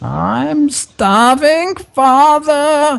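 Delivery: very high, unearthly, inhuman shriek. Telling of a voice heard from below the chapel floor, an inhuman scream. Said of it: "you can hear this inhuman scream".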